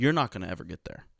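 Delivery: ordinary talk, nothing marked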